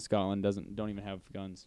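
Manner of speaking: ordinary talk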